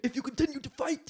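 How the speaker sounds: movie-trailer announcer delivery, pitched very high. Quoting a line from the Rogue One trailer: Saw Gerrera impression. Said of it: "that's a Saw Gerrera impression from the Rogue One trailer".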